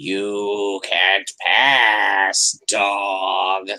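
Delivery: deep, very slow, drawn-out growling cat voice. Storyteller voicing a cat challenging a dog: deep cat growl. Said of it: "It's deep cat growl".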